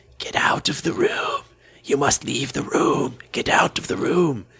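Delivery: slow, drawn-out, creepy, eerie whisper. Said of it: "in a voice going".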